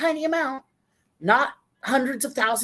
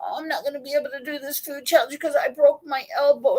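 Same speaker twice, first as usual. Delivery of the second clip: mock whining, pitched higher; 3 semitones higher than usual. Retelling a video maker's excuse about her broken elbow: imitating someone whining. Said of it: "she was basically whining".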